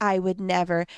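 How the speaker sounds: put-on self-righteous tone. Retelling how past house guests talked: imitating a holier-than-thou tone. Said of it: "the holier than thou attitude".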